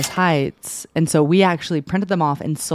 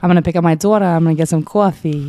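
put-on New York accent; 2 semitones higher, 6 dB louder than usual. Asked whether they're a New Yorker, the podcast guest answers in a put-on New York accent. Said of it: "New Yorker?".

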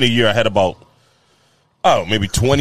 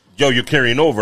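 plain

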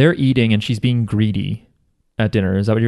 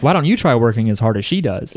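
plain

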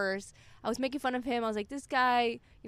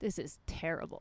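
mock whisper, much quieter and lower; 7 semitones lower, 7 dB quieter than usual. Recalling bombing on stage, retelling an audience member's remark, a whispered remark. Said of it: "you could hear the whisper".

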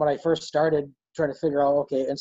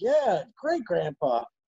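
put-on high-pitched, eager, excited kid voice. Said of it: "I'm like".

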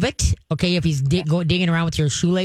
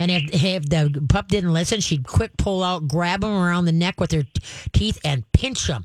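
usual speaking voice

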